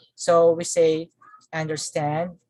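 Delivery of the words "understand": understand with stress on the final syllable stand. Lesson on stress in compound verbs: main stress on 'stand' in understand. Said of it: "compound verbs have a primary stress on the second component".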